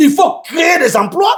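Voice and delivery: shouted delivery.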